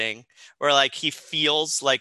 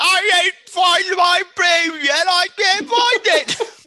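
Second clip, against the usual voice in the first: very high, slow, put-on Cockney London accent; 7 dB louder than usual. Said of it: "Cockney London right now".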